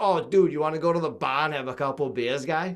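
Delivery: heavy, thick Boston accent with dropped Rs. Showing how people around Boston ask about beers: thick Boston accent, dropped Rs. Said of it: "that's what, like, people say around here".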